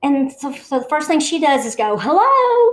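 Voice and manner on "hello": very high, really loud call. Retelling a friend calling out into an empty building: imitating a loud hello. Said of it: "really loud".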